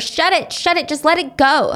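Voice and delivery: mild, toned-down, token screaming. Retelling a thirteen-year-old girl yelling at an older woman: imitating someone screaming. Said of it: "starts screaming at her".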